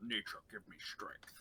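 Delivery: breathy whisper to oneself, under the breath. A player describes their character's move during a game: whisper under the breath. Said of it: "I just whisper under my breath like".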